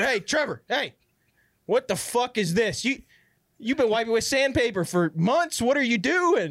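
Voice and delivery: mock high-pitched shouted yell. Retelling yelling to someone after coming into the bathroom, retelling a yell. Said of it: "I yelled to her".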